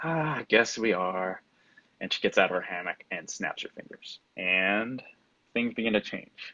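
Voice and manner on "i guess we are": heavy, very slow, sighed delivery. Narrator voices a woman at an impasse answering a rival, sighing. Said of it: "She sighs and she says".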